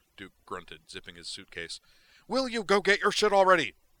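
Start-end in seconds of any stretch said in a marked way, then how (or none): 2.3-3.7 very high, very loud, impatient shrill yell. A man yells at a companion while flogging him with socks, crying out. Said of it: "he cried at Zoner".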